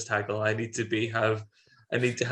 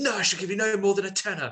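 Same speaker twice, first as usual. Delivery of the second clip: mock pushy, forceful, no-nonsense, pitched-up tone; 9 semitones higher than usual. Retelling a film scene and quoting a character: imitating someone being forceful. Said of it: "is really forceful".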